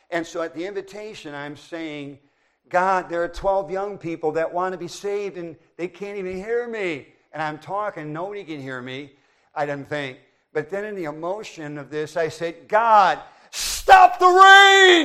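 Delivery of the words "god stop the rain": very loud, very high shout with "rain" drawn out. Retelling crying out to God at the invitation in the rain: retelling a loud shout. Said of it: "I said it as loud as I could".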